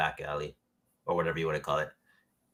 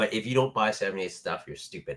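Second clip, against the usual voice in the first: ordinary talk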